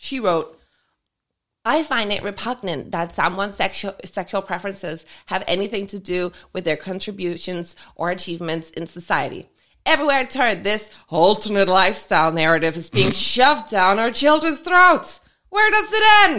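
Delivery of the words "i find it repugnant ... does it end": put-on New Jersey accent while reading. Reading a woman's written comments aloud to listeners: quoting in a put-on accent. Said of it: "And a perfect accent".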